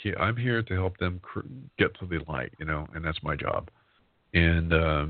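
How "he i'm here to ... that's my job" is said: ordinary delivery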